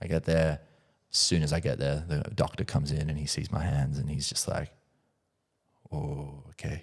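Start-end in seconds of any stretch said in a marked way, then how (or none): 5.9-6.8 put-on Japanese-accented English. Retelling what the doctor said on seeing the hands: imitating a doctor's Japanese-accented English. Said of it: "in his Japanese, English".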